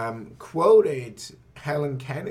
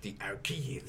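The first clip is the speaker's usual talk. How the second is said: exaggerated, badly done British mock continental French accent; 4 semitones lower, 11 dB quieter than usual. Reading a word from a coin design in a bad British mock-French accent. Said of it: "a bad British impersonation of continental French".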